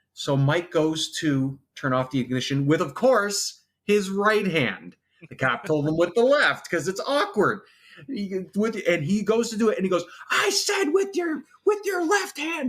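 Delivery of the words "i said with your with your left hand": shrill, very high, acted-out scream. Retelling a cop yelling an order at Mike, imitating a scream. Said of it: "screams it".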